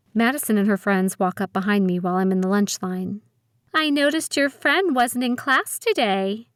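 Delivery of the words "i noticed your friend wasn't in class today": sticky, syrupy sweet voice, pitched up. Madison walks up behind the narrator in the lunch line, sticky, sweet voice. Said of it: "Madison says in a sticky, sweet voice".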